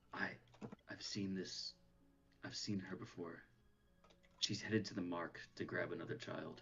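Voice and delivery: quietest possible voice, hushed and barely audible. A character warns the group so a nearby woman won't hear, in the quietest voice possible. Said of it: "in the quietest voice possible".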